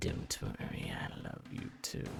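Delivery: creepy, sinister dark villain voice. Telling a player he loves them too: creepy Dark Lord voice. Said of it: "Do not use that voice with me".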